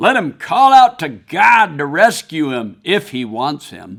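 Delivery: put-on scornful, sneering, mocking jeer. Speaker retelling what the mocking crowd said, mimicking a sneering crowd. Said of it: "by my tone of voice what I hear".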